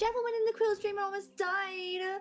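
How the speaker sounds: put-on shrill, very high little kid voice. Showing another player how to do an accusatory kid voice. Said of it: "how to do a kid voice".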